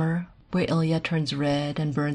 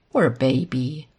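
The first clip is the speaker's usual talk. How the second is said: mocking, derisive tone; 3 semitones lower than usual. A woman answers Ilya's self-pity, in a mocking tone. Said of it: "she says in a mocking tone".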